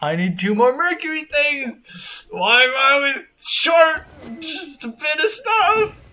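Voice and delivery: speaking through clenched, gritted teeth. Complaining about always being short of stuff, through gritted teeth. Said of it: "Why do you sound like you're gritting your teeth?".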